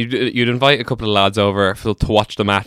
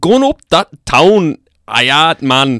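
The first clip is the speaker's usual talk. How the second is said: put-on Geordie accent, louder; 6 semitones higher, 6 dB louder than usual. Asked to do a Scottish accent, the speaker tries and lands on a Geordie accent. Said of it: "no, that's Geordie".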